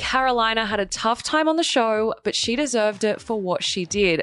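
ordinary delivery

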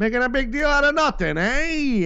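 very high 1920s carnival barker voice. Talking to listeners, slipping into a 1920s carnival barker voice. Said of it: "I sound like a guy from a carnival barker guy again from the 20s".

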